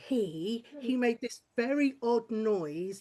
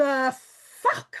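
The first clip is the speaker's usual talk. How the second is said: raging, incredulous, very loud furious yell; 4 semitones higher, 8 dB louder than usual. Retelling own reply when the guy rang six months later: imitating own fuming reply. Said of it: "I was fuming".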